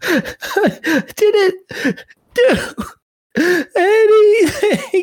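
very high, slow sobbing speech. Voicing a threatened woman answering her questioners, sobbing uncontrollably. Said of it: "She's just sobbing uncontrollably".

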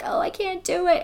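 acted, very high, weepy, tearful crying voice. Retelling a movie scene where a character cries holding a shotgun: imitating someone crying. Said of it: "she's got the shotgun and she's crying and she's like".

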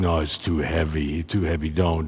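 put-on, probably terrible German accent. Quoting a man advising against taking greek: german accent, probably terrible. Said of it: "My German accent's probably terrible, but he that's the way he spoke".

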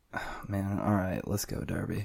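soft, beaten, deflated, defeated voice. Asked to pick derby or playoffs after losing his bets, the speaker answers sounding defeated. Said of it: "Do you hear the defeat in my voice?".

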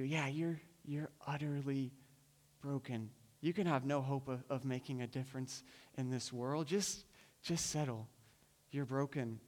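tempting whisper. Preaching, voicing the enemy who tells listeners to settle: whispering as the enemy. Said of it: "he's trying to whisper to you".

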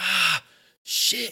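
acted, very high, shrill screaming yelp. Describing a kid hitting his shoulder on a door frame, imitating him screaming. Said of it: "he like starts screaming".

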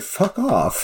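overly polite British tone. Retelling how a film character turns down a request: imitating an extremely polite British tone. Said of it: "the most polite way I've ever heard anybody say".

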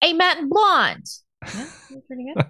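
put-on New Jersey accent. Reading a listener question signed Junior Soprano, in a Junior Soprano New Jersey accent. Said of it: "reading in a New Jersey accent".

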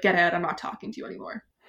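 mock angry man voice. Retelling a book scene where Mister Crimplesham gets mad: imitating an angry Mister Crimplesham. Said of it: "gets just so mad".

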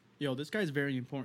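ordinary delivery

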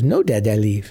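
imitated little child's voice. Retelling what a child in the car seat said: imitating a little child's voice. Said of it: "this little voice in the car seat goes".

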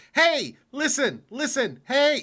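shrill, high, loud, swooping and drawn out. Retelling mocking the trainer whenever he spoke: imitating Navi. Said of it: "I would start going".

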